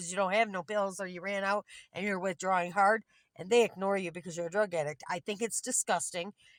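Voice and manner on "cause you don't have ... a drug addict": ordinary delivery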